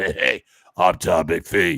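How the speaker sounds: raspy, strained, scorched-sounding voice. Doing a man who sounds like a hot poker went down his throat: raspy Tom McPhee voice. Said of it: "sounds like he's fucking had a hot poker shoved down his throat".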